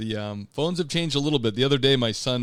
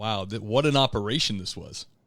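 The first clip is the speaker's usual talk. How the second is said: ordinary talk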